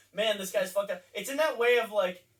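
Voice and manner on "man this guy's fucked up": normal talking voice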